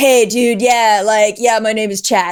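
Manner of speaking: easygoing, laid-back beach-bum surfer-dude voice. Recalling a surfer guy named Chad he texted with, imitating Chad's surfer-guy talk. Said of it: "Like, that's how he talked".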